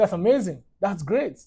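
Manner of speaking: normal talking voice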